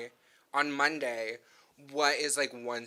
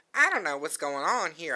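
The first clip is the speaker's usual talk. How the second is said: put-on raised, higher-pitched Southern accent; 5 semitones higher, 5 dB louder than usual. Retelling a comic scene, imitating a character: Rogue's Southern accent. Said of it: "I'm trying to do Rogue's Southern accent".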